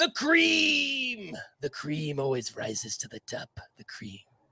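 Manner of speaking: big, swooping, drawn-out wrestling promo voice, "cream" stretched. Doing a wrestling promo as an impression: Macho Man impression. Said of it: "It's my Macho Man".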